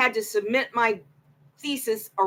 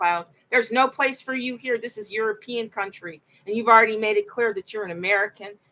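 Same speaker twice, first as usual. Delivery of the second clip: ordinary talk, nothing marked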